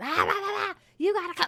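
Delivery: play-acted very high, hyped-up, overexcited shouting. Complaining about agents who yell in their videos, imitating agents yelling. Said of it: "agents who are like yelling in their video".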